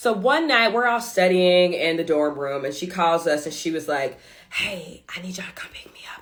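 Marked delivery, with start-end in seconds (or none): 4.5-6.2 barely audible, very quiet, breathy whisper. Telling a story, quoting a girl who phoned the group one night: retelling a whisper. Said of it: "And she's whispering".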